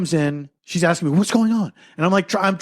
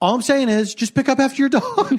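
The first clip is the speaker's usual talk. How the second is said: mock, high, patronising, talking-down condescending tone; 6 semitones higher than usual. Retelling a neighbor's complaint about dog mess: imitating a condescending tone. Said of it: "in this condescending way".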